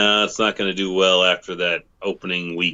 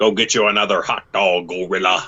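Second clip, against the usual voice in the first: wrestling ringside commentator announcer voice. Channeling a wrestling persona after urging the other: Jesse Ventura WrestleMania voice. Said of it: "channel your Jesse Ventura from WrestleMania".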